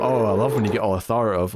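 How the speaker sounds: ordinary delivery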